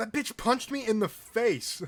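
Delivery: high, slow, furious yell.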